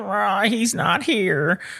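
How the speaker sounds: put-on high-pitched, slow elderly lady voice. Retelling a phone call, the speaker quotes the old lady's reply: old lady voice. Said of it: "the old lady replies".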